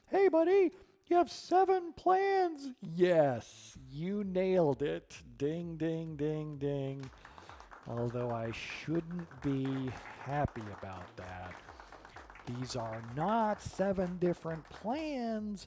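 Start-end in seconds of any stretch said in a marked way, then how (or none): 0.1-2.7 shrill, very high, very loud helper voice. Explaining a diagnostic query's output, the speaker voices it as Clippy: Clippy voice. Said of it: "I'll use my clippy voice".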